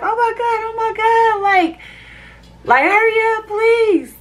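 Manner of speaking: acted scream of pain. Recounting what they screamed while in pain, retelling a scream. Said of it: "I'm like screaming".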